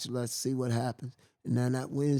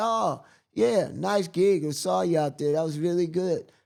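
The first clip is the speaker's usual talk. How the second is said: put-on American accent, high and loud; 5 semitones higher, 6 dB louder than usual. Retelling what a man said on approaching him, in an american accent. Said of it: "in American accent and all that".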